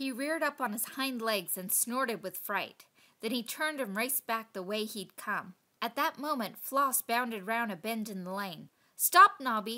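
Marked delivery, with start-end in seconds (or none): 9.0-9.8 very loud, barked delivery. A narrator reads Floss calling out to Nobby when she sees him, barked. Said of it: "she barked".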